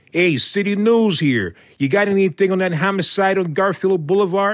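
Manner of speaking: put-on Chicago accent. Retelling a city news phone call to police, in a chicago accent. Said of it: "teaching me how to speak in a Chicago accent".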